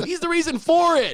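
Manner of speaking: put-on very high little-kid voice. Retelling a clip watched back on YouTube, imitating a little kid's voice. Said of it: "you literally hear this little kid go".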